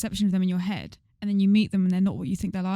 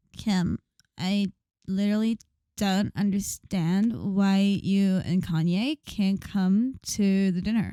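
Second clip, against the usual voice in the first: very slow, drawn-out reality-star drawl. Asked to do your best impression for a skit, speak in a Kardashian impression. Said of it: "Do your best Kardashians impression".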